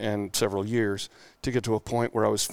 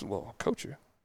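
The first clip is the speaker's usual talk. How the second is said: acted mutter, much quieter and faster; 9 dB quieter than usual. Speaker retells what a man said to him, retelling an under-breath mutter. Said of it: "under his breath".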